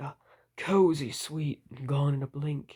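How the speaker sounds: seductive, very sultry, low delivery. Reading a cereal flavor description aloud, very sultry voice. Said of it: "I want to read it in like a very sultry voice".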